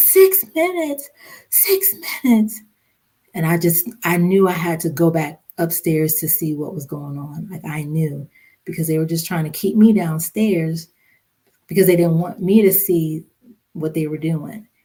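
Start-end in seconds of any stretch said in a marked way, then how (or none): 0.0-2.6 very high, shrill, repeated screaming. Retelling how a mother-in-law reacted on the phone: retelling someone screaming. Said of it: "she just started screaming".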